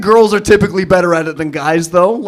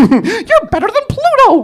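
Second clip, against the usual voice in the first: very high, swooping, sing-song cartoon squeak. Retelling doing bits during intimacy with girlfriend: Mickey Mouse voice. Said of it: "a little Mickey Mouse".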